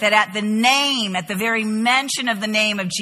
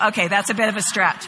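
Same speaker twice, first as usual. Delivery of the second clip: plain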